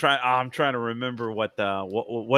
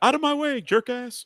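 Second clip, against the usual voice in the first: very high-pitched yelling; 11 semitones higher than usual. Retelling what he yells in traffic: imitating his own yell at drivers. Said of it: "and I also yell out".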